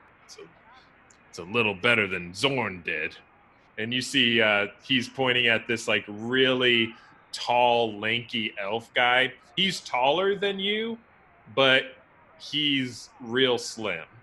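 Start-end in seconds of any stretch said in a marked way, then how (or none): 0.3-3.2 muttered quietly under the breath. In a role-play scene, a character makes a comparison, under the breath. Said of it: "I gotta keep this under my breath".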